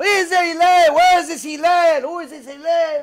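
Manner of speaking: full-throated, high, loud, demanding scream at top of lungs. Telling a story of a man shouting at a door for someone: retelling a scream at the top of lungs. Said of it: "He's screaming at the top of his lungs".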